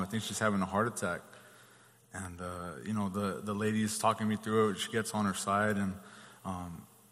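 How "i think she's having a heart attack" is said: ordinary talk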